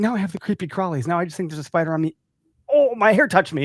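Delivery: put-on high, frantic, freaked-out, panicked rush of words. A parent retells the daughter's reaction to a spider in the car, imitating panicking daughter. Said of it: "she's freaking panicking".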